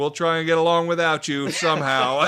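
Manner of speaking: put-on booming sarcasm. Retelling a coworker's reply to an angry customer: imitating a sarcastic reply.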